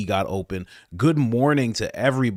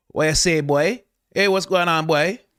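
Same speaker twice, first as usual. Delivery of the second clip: Trinidadian accent; 8 semitones higher, 4 dB louder than usual. Answering someone's good morning from Trinidad, doing a Trinidadian accent. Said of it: "That's how they talk in Trinidad".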